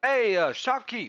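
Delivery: very loud, very high-pitched shout. Calling after a shopkeeper who is taking off, raised voice. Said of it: "sort of like raise my voice and go".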